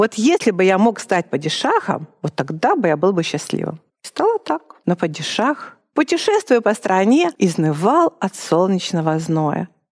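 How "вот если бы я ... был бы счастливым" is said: plain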